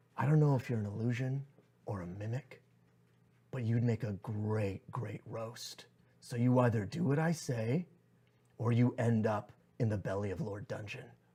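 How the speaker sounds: menacing, hushed, threatening half-whisper. Getting down low to intimidate a treasure chest, half-whispering in its ear. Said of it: "whispers in its ear and goes".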